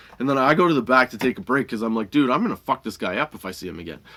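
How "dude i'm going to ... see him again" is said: ordinary delivery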